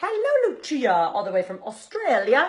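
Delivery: very bad put-on Australian accent, loud, sing-song. Greeting a viewer from Australia during a makeup video, worst Australian accent ever. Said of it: "Worst Australian accent ever".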